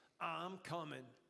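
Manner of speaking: seventies-style sexy voice with New York accent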